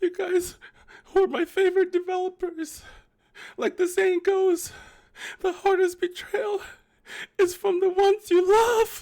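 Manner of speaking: very high, loud, shrill fake sad wail. Addressing the game developers, in a put-on sad voice. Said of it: "let me do it in my sad voice".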